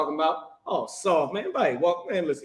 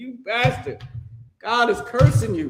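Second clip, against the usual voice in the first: mock preacher voice, high, hollering yell; 7 semitones higher than usual. Saying how to preach to a crowd: imitating yelling at someone. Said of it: "you need to yell at 'em and say".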